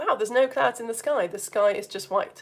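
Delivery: normal talking voice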